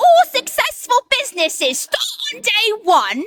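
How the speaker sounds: Cockney accent, pitched very high. Saying an affirmation in a silly voice for a card: cockney accent. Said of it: "Let's do it in a Cockney accent".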